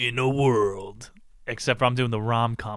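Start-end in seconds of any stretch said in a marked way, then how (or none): 0.0-1.1 nineties movie-trailer announcer narrator voice. Imitating the film trailer guy: nineties film trailer voice. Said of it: "The guy".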